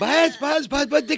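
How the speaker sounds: high-pitched, soothing, hushed voice.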